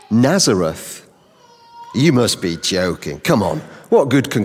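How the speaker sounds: low, grumpy, pessimistic grumble, dismissive. Retelling how Nathaniel answered news about Jesus, the speaker is acting out a grumpy reply. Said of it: "slightly pessimistic. Grumpy response".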